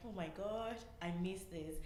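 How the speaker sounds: usual speaking voice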